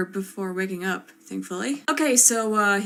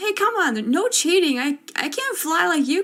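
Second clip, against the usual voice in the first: higher-pitched frustrated yell; 8 semitones higher than usual. Retelling yelling up at a flying opponent during basketball: imitating own yelling. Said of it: "I was even yelling up at him".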